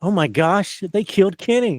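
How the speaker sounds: high cartoonish animated-style exclaiming voice. Recapping a movie scene, quoting Eric's line with South Park-style exclaiming. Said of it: "Eric exclaims in a South Park manner".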